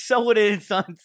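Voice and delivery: loud, high-pitched mock tough-guy shout.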